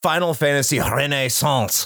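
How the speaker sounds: exaggerated put-on French accent. Naming the game he has been playing, horrific French accent. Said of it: "I'm gonna say this like a dirty Frenchman, probably in a horrific accent".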